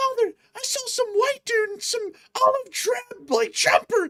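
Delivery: put-on very high small child's voice. Acting out a kid telling his father what he saw: imitating a kid. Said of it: "and the kid's like".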